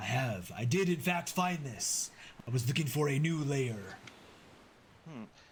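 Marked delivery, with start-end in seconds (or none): 0.0-3.8 boastful, prideful dragon voice. A bronze dragon answers a player's question about his lair, prideful bronze dragon voice. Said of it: "bronze dragons are very prideful. / very close and brings his very large head toward most of you. / this, this is my hoard".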